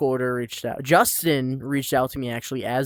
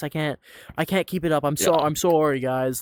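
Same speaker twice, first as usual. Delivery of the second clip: mock, frantic over-apologetic tone; 2 semitones higher than usual. Acting out a Canadian spy who can't keep up the act: mock apologizing like crazy. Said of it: "apologizing like crazy".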